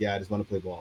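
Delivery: put-on muttering under the breath. Retelling what a player said to a trash-talking opponent: imitating Chelsea Britton muttering under breath. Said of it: "I heard what she was saying under her breath".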